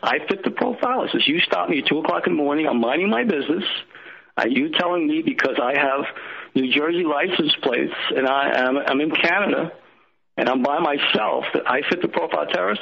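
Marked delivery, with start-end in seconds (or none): none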